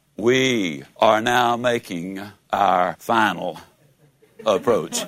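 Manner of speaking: very deep, resonant pilot voice, like an intercom. Retelling the captain's intercom announcement before landing, deep, resonant pilot voice. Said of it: "in that deep, resonant voice announced".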